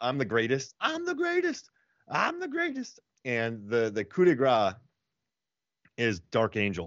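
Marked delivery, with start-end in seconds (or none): 0.8-3.0 very high, swooping scream, climbing higher each time. Retelling a scene from the Nick Cage helicopter movie: imitating Nick Cage screaming. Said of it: "Where he just screams".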